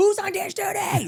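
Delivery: put-on, very high, drawn-out head-chef yell. Retelling a friend shouting orders during a cooking game: imitating someone yelling. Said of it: "Like, yelling".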